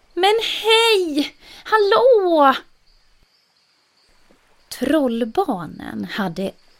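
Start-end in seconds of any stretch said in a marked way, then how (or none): 0.2-2.6 very high, loud gleeful call, drawn-out hej. A polar bear on an ice floe waves to the troll children; gladly calling out. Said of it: "vinkade och ropade".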